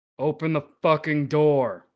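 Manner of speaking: menacing intimidating tone. Voicing a stranger at the door demanding entry: intimidating demand. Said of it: "intimidate them to open the door".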